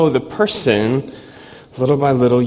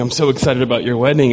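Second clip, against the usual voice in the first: usual speaking voice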